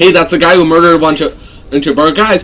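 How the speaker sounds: ordinary delivery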